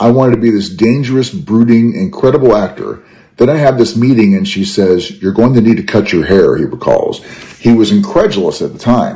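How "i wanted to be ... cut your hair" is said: ordinary delivery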